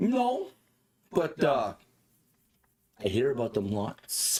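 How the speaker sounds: put-on drunken character voice. A stumbling man holding a bottle answers a question, in a drunk man's voice. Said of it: "He's walking around stumbling, but he's clearly got a bottle in his hand. / He's walking around stumbling, / but he's clearly got a bottle in his hand".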